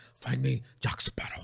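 whispered, mushy, as if through a mouthful of marbles. Describing a film villain's speech: Javier Bardem marble-mouth voice. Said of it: "kinda like that marble mouth".

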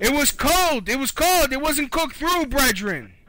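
put-on furious voice, shrill, high-pitched and loud. Playing a customer phoning about a delivered order, fake angry customer caller.

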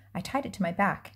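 ordinary delivery

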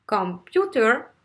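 computer said com-PU-ter, second syllable stressed. Teaching english word stress in french, say computer with stress on the second syllable. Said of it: "là c'est la deuxième syllabe".

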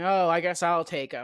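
ordinary talk, nothing marked

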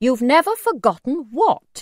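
stern, demanding tone. A narrator reads the narrator's mother questioning a little man, stern. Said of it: "my mother asked sternly".

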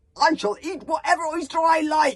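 loud, high, furious angry bellowing roar. Stoic the Vast refuses as Humongous reaches for his oyster, roaring. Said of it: "roared Stoic the Vast".

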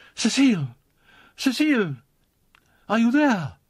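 high, loud, breathless cry, out of breath. Jeanne's mother hurries down the passage calling for cecile, breathless cry. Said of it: "a breathless voice cried".

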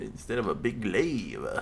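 soft, cartoonish character voice. Repeating the other speaker's words, accidentally doing a Simpsons character voice. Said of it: "I sound like the fucking one of the guy from The Simpsons".

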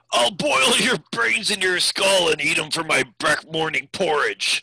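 snarling, shouted orc voice. Game master voicing an orc war chief yelling back, snarling orc war chief. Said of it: "The war chief has the girl, and he is pulling her back, [name], but he's not, like, you can just hear by his voice as he's shouting, right? You can hear his snarling voice".

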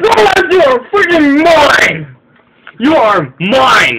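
very loud, high, drawn-out triumphant screaming.

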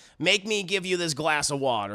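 plain

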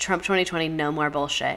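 ordinary talk, nothing marked

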